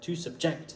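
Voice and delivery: subject with stress on second syllable -ject. Explaining English word stress in French, stress on ject in subject. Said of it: "ject, tu l'entends plus que sub".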